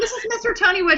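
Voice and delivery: high, laughing, giggling delivery.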